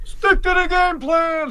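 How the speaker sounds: high, slow, booming voice like a foghorn.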